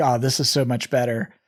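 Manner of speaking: plain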